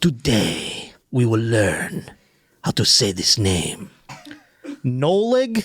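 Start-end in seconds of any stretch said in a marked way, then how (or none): 0.0-3.9 put-on Spanish-accented voice, lower. Imitating the pronunciation video's narrator: imitating Antonio Banderas.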